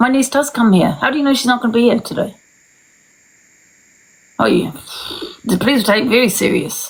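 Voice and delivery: mad, angry delivery. Complaining that strangers may come to the house: angry. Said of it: "Sorry, guys, I'm mad".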